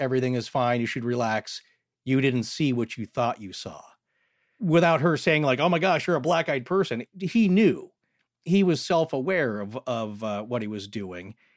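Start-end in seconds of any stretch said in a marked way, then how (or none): 0.0-3.5 flat monotone voice. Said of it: "in a monotone voice".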